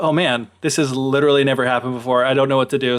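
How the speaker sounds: plain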